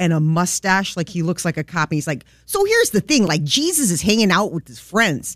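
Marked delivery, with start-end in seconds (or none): 2.4-5.4 put-on thick Chicago accent, high, swooping, sing-song. Imitating a Polish priest from Chicago's South Side: thick Chicago accent. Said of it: "He has this thick accent".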